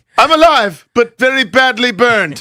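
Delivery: very high, squeaked-out comic character voice. Quoting a movie character after being told they sound like him: Mustafa voice. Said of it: "Mustafa, Will Ferrell's character".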